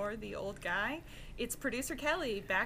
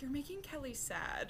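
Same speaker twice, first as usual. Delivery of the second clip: murmured, muttered sidelong under the breath; 3 semitones higher, 5 dB quieter than usual. Retelling a remark made under the breath: imitating Akiva muttering under his breath. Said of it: "under his breath as usual".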